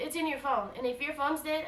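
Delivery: plain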